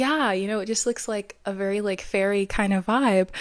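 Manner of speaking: ordinary delivery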